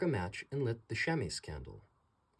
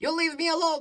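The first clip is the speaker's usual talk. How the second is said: very high, shrill, very loud, frightened goblin squeak; 9 dB louder than usual. Reading the little goblin's reply in a story, squeaky goblin voice. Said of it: "he squeaked".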